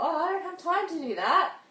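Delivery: mock excusing tone, high and loud.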